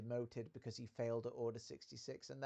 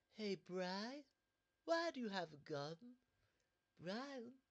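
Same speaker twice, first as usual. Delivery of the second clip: camp, high, swooping sing-song voice; 9 semitones higher than usual. Showing how a cartoon character talks now: camp Stewie Griffin voice. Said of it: "before he became camp".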